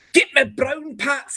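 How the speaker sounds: put-on Scottish accent, high pitch, rolled r's. Explaining that a Scottish accent is hard, rolling R's: put-on Scottish accent. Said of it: "Scottish is a little hard ... You try to roll your R's like you're on a ship".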